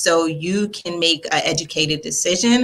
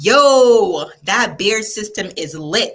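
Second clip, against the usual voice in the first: put-on New York accent, drawn-out "yo"; 3 semitones higher, 3 dB louder than usual. Voicing Fiazzo's words back to them, imitating Fiazzo's New York voice. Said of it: "Why am I trying to um, imitate everybody's voice?".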